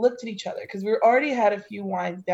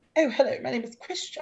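mocking posh voice, higher; 4 semitones higher than usual. Retelling a first meeting with a quiet person: imitating a posh voice. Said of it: "I just remember being like".

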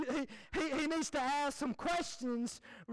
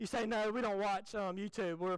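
normal talking voice

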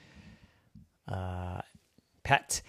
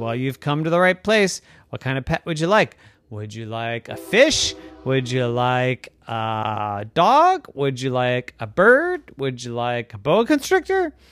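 plain

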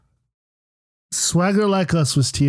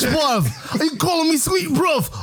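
very high, mock put-on British accent. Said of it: "in a British accent".

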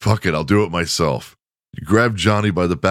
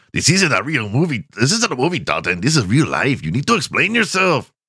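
put-on Mexican accent, sing-song; 6 semitones higher than usual. Narrating a story, voicing a gang member, in a mexican accent. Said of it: "I have to do a Mexican accent".

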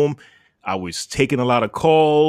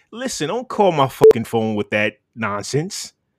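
ordinary talk, nothing marked

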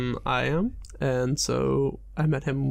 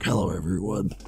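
put-on low voice of a middle-aged man. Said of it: "sounding like a forty-five-year-old man".

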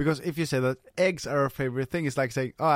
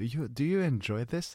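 put-on whisper; 4 dB quieter than usual. Retelling asking a girlfriend about the food, imitating own whisper.

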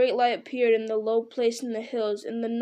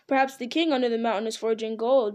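ordinary delivery

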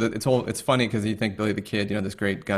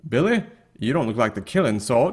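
terrible, exaggerated put-on cowboy accent; 2 semitones higher, 3 dB louder than usual. Quoting an actor's line in a Western, imitating Charlie Sheen's bad accent. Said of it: "his attempt at an accent".

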